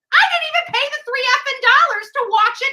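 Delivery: furious, very high-pitched, loud voice. Betty, really pissed at someone she is addressing, angry with her voice going way up. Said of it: "when she's really pissed, her voice goes up several octaves".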